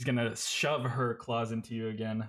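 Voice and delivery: ordinary talk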